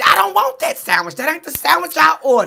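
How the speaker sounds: shrill, swooping, very loud, very high angry yelling. Retelling Jada refusing the offered sandwich: imitating angry Jada. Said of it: "you went off".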